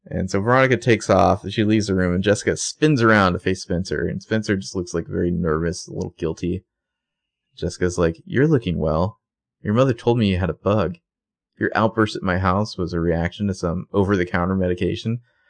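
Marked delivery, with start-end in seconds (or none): none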